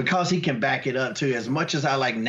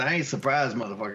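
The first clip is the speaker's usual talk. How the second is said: plain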